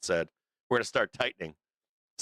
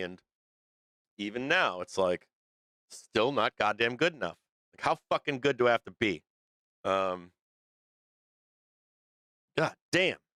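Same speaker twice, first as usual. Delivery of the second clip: worked-up, fired-up, frustrated angry rant. A parent of two venting, fired up. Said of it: "I'm gonna get all fired up".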